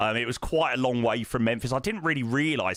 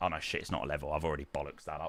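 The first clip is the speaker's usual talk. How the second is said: normal talking voice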